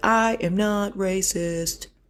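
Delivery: very slow, heavily deliberate, drawn-out put-on voice. Quoting a woman finishing her statement, in a Trump voice. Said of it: "I just did the Trump voice".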